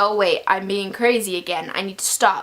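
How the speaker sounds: ordinary talk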